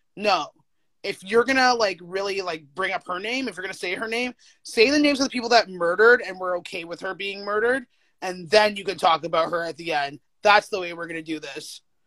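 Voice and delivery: ordinary talk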